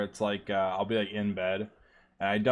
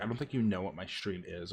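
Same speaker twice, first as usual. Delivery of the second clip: put-on snappy, curt, short-tempered delivery; 2 semitones lower, 7 dB quieter than usual. Retelling how a streamer replied to them: imitating a snappy reply. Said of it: "all snappy and stuff".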